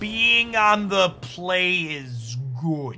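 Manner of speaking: slow, careful, deliberate, drawn-out delivery. Repeating a point so viewers can take notes: said slower. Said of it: "let me say that again slower".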